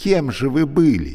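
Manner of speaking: sneering, ironic tone. A woman asks a talking lift a question, mocking. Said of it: "насмешливо спросила она".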